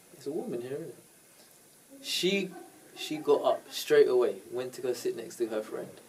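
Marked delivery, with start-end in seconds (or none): 0.1-1.0 soft, very quiet, close half-whisper. Retelling a flirty remark said into someone's ear: imitating a half-whisper. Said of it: "I whispered in her ear".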